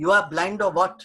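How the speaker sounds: loud, angry, fed-up tone. Retelling an argument with a shopman over defective soap, retelling a loud reply. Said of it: "with loud voice I'm saying".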